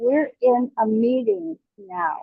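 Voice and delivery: put-on, loud, very angry voice. Retelling what a nurse said at the doorway, imitating a very angry voice. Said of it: "said in a very angry voice".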